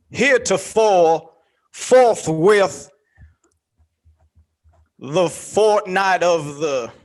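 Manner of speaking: mock slow, wordy, big-word delivery. Mocking a man who talks slow and uses big words. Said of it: "he talks slow and uses big words".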